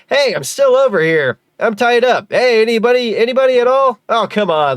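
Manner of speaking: overacted, exaggerated, very high, loud hammy cries. Speaker demonstrates hamming up his own natural voice, hammed-up exaggerated delivery. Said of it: "if I ham it up".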